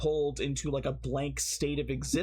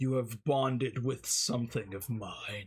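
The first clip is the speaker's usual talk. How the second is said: monstrous demon voice, lower pitch; 3 semitones lower than usual. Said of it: "in a beastly voice said".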